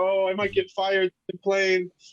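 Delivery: high, teary voice, speaking through tears. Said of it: "crying about it".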